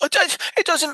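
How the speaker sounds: very high, shrill, screechy little brat voice. Retelling a twelve-year-old's boast to his friend, in a screechy kid voice. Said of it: "his little screechy voice".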